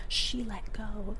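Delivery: very soft, hushed, barely-there whisper. Retelling what a kid in a video whispered; whispering. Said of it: "the kid just whispers".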